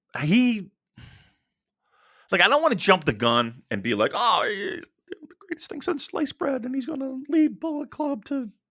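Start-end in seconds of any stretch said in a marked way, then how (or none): 4.1-8.4 very high, soft, gushing put-on voice. Podcast speaker acts out an imagined reaction in a high-pitched voice. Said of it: "I don't know why I'm talking in a high pitched voice".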